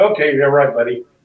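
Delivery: ordinary talk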